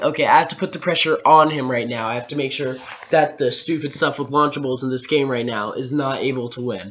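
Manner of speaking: ordinary talk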